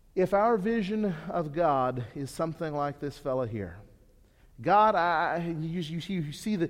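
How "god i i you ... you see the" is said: usual speaking voice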